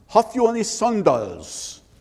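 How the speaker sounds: put-on thick German accent with drawn-out words. Telling a story, the speaker quotes Einstein asking Rothman, in a thick German accent. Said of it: "a very thick German accent".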